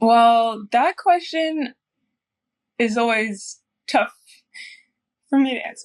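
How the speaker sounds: speaking through tears, halting, voice cracking. Asked who she is, a dancer begins her answer, crying while speaking. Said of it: "I'm crying again".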